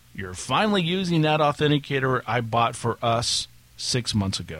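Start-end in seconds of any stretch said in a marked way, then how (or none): none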